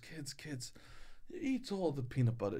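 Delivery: whispered, hushed put-on Swedish accent. Quoting what the speaker's grandmother told the kids, swedish accent attempt. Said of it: "This is [name]'s attempt at a Swedish accent".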